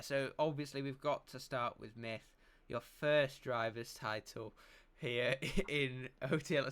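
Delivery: words broken up by laughing. Host asking a player about their first driver's title, laughing while talking. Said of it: "I'm laughing because I've just seen something in chat".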